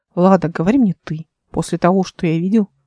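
plain

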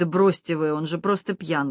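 ordinary delivery, nothing marked

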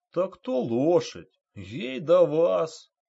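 slow, deferential, respectful delivery. The driver answers the wrestler who told him to put out his cigarette, respectful. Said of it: "уважительно заметил водитель".

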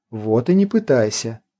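soft, low, mild and gentle voice. Catherine continues speaking to Arthur, the young pilot, in a soft voice. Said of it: "тем же мягким голосом продолжила Кэтрин".

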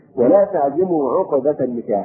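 ordinary delivery

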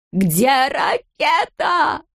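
screeching shout. Reading a story, the narrator voices a character's question in a shrill shriek. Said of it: "закричал он визгливым голосом".

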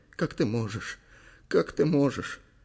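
groaning, chattering teeth. A shivering woman speaks to a man running up; moaning, teeth chattering. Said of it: "простонала она, стуча зубами".

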